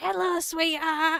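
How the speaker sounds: play-acted, loud, high, ear-blasting voice right into microphone. Recounting a woman at the door speaking close into the microphone, imitating her ear-blasting voice. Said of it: "so it was blasting my ears".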